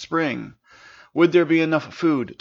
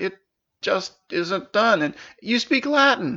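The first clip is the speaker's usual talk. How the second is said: stuttering, stammering, much higher; 7 semitones higher than usual. A man answers a princess's question about his land; stuttering. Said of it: "Sin stuttered".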